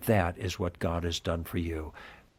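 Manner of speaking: solemn, hushed, soft and slow delivery.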